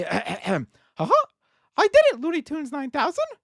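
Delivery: drawn out, with pitch swinging up and down. Asked to do their Mickey Mouse voice, finally pulling it off. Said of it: "do your Mickey Mouse voice".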